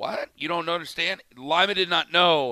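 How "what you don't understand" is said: ordinary talk, nothing marked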